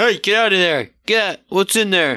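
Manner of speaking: loud, high-pitched hollering. Player showing how their character yells at what is in the dumpster: yelling. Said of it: "I'm going to yell at what's in there".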